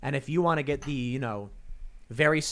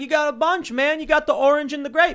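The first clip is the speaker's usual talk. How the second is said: put-on Kentucky accent, very high and loud; 12 semitones higher, 8 dB louder than usual. Retelling how a Kentucky guy asked for a Coke, imitating a Kentucky accent. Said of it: "your Kentucky accent is pretty solid".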